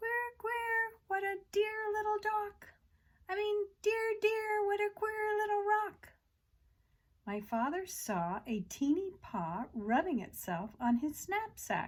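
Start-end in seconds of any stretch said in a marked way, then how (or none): 0.0-6.1 funny, very high, squeaky little mouse voice. Reading a story aloud, a mouse speaking as the father wakes: funny little voice. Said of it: "a funny little voice saying".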